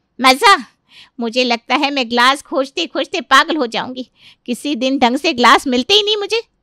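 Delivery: loud, angry outburst. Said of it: "अरे इतना गुस्सा ना करो".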